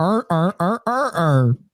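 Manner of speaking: mimicked seal-like noises. Act out people hearing how they sound when they say a phrase, sounding like seals. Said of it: "that's how we sound, bro".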